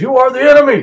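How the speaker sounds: high, screeching, shrill yell at full blast. Describing a clip of a man putting up a picture, retelling a yell. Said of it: "And he just started screaming".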